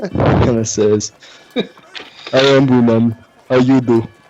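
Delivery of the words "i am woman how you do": dull, grunting, simple-minded caveman-style talk. Describing a belching character who greets you, quoting him, grunting simple-worded voice. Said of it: "he kind of grunts and, and s- sticks to simple words".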